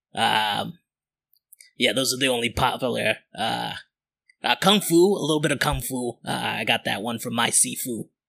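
put-on ninja voice with New Jersey accent. Narrating a scene, a ninja on stage addresses the assembly in a New Jersey ninja voice. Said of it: "exactly what you'd assume a New Jersey ninja".

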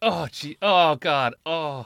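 very loud, long exclamations. Imitating a friend's reaction on dropping a drink: imitating Andrew's spill reaction. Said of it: "of Andrew's reaction when he first dropped it".

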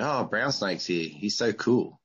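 ordinary delivery

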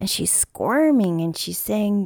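ordinary talk, nothing marked

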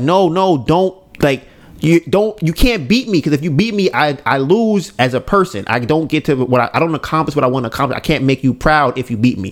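ordinary talk

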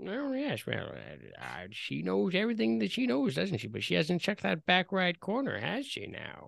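soft, sing-song, teasing, almost mocking old man voice. An old man's voice floats over the clearing toward you: almost mocking old man's voice. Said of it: "almost mocking".

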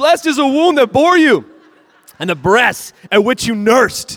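very high, loud, thrilled, acted-out excited cry. Preacher acts out a woman in the crowd calling to Jesus, acting out an excited shout. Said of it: "This woman is excited".

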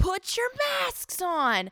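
put-on indignant, outraged, high-pitched older woman's voice. Retelling an old woman who was outraged at them; imitating an outraged woman. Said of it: "outraged at us".

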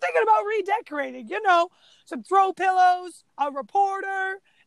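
mocking high-pitched quip. Retelling a movie line by Raphael: imitating Raphael's sarcasm. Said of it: "that's funny sarcasm right there".

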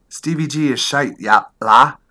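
put-on Liverpool accent. Acting out an Everton supporter in a typical fan conversation, bad Scouse accent. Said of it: "That was not a great British accent".

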